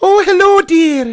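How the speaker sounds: shrill, loud, overdone character voice pushed too high. Trying the Mrs Doubtfire greeting again, still too high. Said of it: "I've gone too high pitch".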